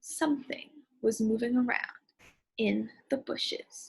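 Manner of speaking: very slow, hushed, drawn-out suspense-building delivery. Author repeats a story line for readers to build suspense: really slow suspense reading. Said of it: "I made my voice sound really slow".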